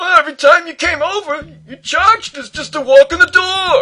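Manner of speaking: exclaiming defensively. Narrator reading a customer answering a repairman's accusation, exclaiming defensively. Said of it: "he exclaimed, sounding defensive".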